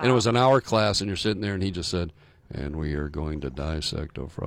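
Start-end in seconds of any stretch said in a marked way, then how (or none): 2.5-4.5 dull, low, quiet, one-note monotone. Recalling a boring biology teacher's hour-long class: imitating Mr. Shum's monotone. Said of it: "But he's monotone".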